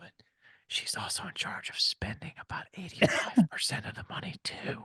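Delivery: whispered. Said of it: "I'm gonna whisper this".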